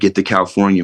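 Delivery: plain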